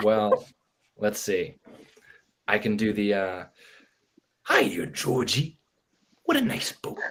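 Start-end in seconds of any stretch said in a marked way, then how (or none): 4.5-7.0 creepy, chilling clown voice. Asked on the spot for an impression, obliging with a Pennywise impression. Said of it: "a Pennywise impression?".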